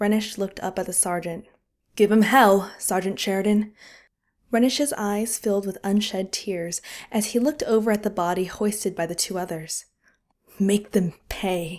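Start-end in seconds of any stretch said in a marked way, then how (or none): 10.6-11.8 hissing speech. Renish, beside a dead boy's bunk, speaks to the sergeant, hissed. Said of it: "he hissed".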